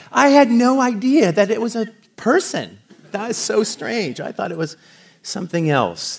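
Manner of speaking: high, mock astonished gasp.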